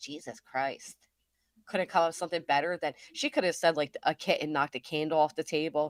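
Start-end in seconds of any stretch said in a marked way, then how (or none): 0.0-0.9 soft, whispered mutter under the breath. Mocking a woman's excuse, the speaker imitates her whispering under her breath. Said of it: "Whispering under her breath".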